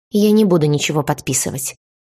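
plain

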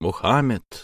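Мухаммед with the second syllable хам stressed. Teaching how the prophet's name should sound: stress on 'хам' in Мухаммед. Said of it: "с ударением на втором слоге".

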